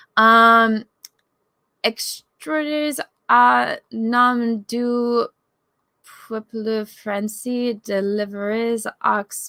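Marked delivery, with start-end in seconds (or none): 1.8-9.5 halting, very slow, terrible French accent. Asked to read French aloud, the speaker tries it in a terrible French accent. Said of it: "I have a terrible accent".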